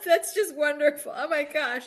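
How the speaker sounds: crying with laughter. Reacting to what the other speaker just said, laughing so hard, teary. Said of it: "I'm crying a little bit because I'm laughing so hard".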